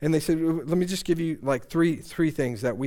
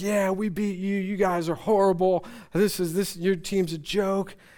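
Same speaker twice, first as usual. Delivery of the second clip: mock taunting tone, higher pitch; 5 semitones higher than usual. Retelling how a drunk fan taunted the speaker after the game: imitating someone mocking. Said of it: "she starts mocking me".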